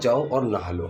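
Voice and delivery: ordinary talk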